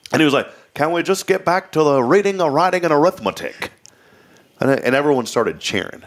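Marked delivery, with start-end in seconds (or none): 0.7-3.7 put-on pitched-up North Carolina Southern accent, touch of Florida. Retelling a preacher's line about schooling: imitating a North Carolina Southern accent. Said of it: "He had the North Carolina Southern accent".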